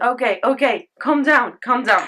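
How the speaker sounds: loud, excited voice, calming down.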